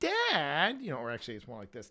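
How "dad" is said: cat voice calling "dad", drawn-out and raised. Retelling how the cat looks back after a chuff: voicing Hudson the cat. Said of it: "he looks at me like".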